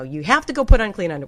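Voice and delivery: ordinary talk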